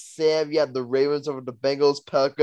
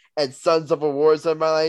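plain

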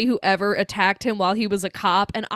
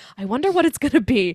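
ordinary delivery

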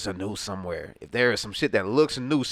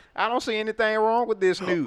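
backwoods hillbilly voice, very high pitched; 13 semitones higher than usual. Imitating a hillbilly who ties nooses and sees no problem: imitating a hillbilly. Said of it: "some hillbilly motherfucker who goddamn just tied".

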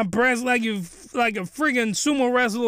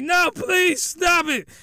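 mock-screaming, much higher, slower; 7 semitones higher than usual. Speaker recounts a man fighting off a woman holding him down, retelling his scream. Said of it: "he's screaming".

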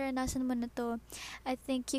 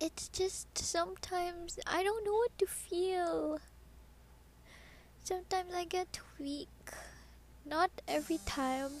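speaking through tears, drawn out, pitched-up crying; 5 semitones higher, 3 dB quieter than usual. Speaking to the audience about struggling to feel happy, crying. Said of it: "yes, I'm crying".

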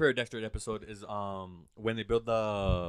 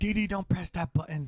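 put-on intense, high-pitched German accent; 8 semitones higher than usual. Doing a quick impression during a conversation: Dexter impression. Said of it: "I loved and hated that impression".

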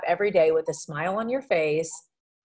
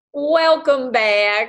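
fake warm Southern drawl, high and loud; 6 semitones higher, 6 dB louder than usual. Welcoming back returning listeners: put-on Southern accent. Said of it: "what an accent change".

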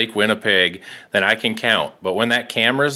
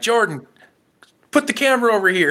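put-on yell, very high, shouted and carrying; 11 semitones higher than usual. Retelling a catch caught on camera, the speaker acts out yelling to the camera guy. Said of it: "I yelled at him".

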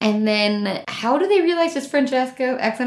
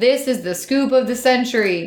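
normal talking voice

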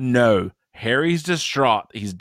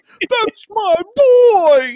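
put-on very high, loud, drawn-out "boy"; 8 dB louder than usual. Retelling a movie scene, imitating Cedric Diggory's dad. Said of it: "I say this so often".

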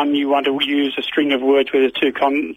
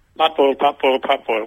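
very quick, rapid-fire delivery. Showing another person how to say the phrase quick as you can, said very quickly. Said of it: "Quick as you can".

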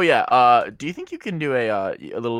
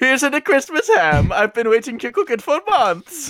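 high, laid-on, put-on Italian accent; 14 semitones higher, 4 dB louder than usual. Reading a script line for the character Chef Luigi, Chef Luigi Italian accent. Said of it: "i wanted to do a better okay, Italian accent".

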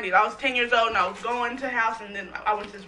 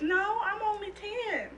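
put-on tiny, very high-pitched, soft little kid voice; 10 semitones higher, 7 dB quieter than usual. Recalling trick-or-treating, answering grown-ups who said they were too old, in a high little kid voice. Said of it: "in my little high little kid voice".

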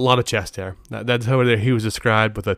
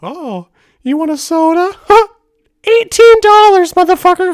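put-on cartoon mouse voice, much higher, louder; 11 dB louder than usual. Retelling a trip spent shaking people down, in a Mickey Mouse voice. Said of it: "You got a Mickey Mouse voice too".

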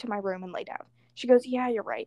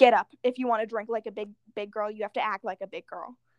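ordinary delivery

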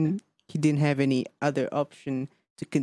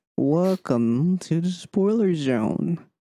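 on-air radio host announcer delivery; 3 semitones higher, 3 dB louder than usual. Opening the spoiler part of the discussion, in a radio voice. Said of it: "Radio voice".

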